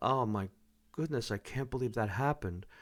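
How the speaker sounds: serious, sad, low, soft, somber tone. Explaining pitch with an example of being sad: serious, sad, lower voice. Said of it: "When we're serious or sad".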